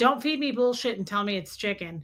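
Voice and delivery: ordinary talk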